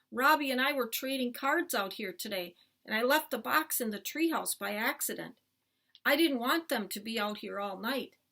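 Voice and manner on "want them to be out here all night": ordinary delivery, nothing marked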